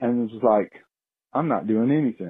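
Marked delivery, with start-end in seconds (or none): 1.3-2.3 very nonchalant, casual, unbothered, couldn't-care-less voice. Speaker voices a bear caught rummaging through garbage, mock-nonchalant bear voice. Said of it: "looked over at me very nonchalantly".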